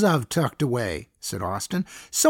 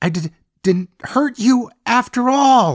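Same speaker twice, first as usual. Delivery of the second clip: loud, high hiss between clenched teeth; 5 semitones higher, 5 dB louder than usual. Wounded and bleeding, Boyd speaks to Tammy, hissed through clenched teeth. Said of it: "Boyd hissed the words between clenched teeth".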